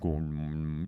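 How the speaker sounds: put-on commanding voice. Retelling how she sounded greeting everyone: imitating the Voice from Dune. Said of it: "speaking in The Voice from Dune".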